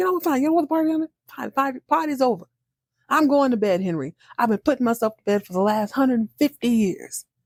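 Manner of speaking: play-acted angry, fed-up, irritated high-pitched rant. Retelling a man ending the party in a huff: imitating an angry man. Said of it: "he's pissed".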